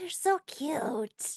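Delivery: high stage whisper. Voicing a kobold that whispers from a shoulder: hushed whisper. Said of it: "a hushed whisper of".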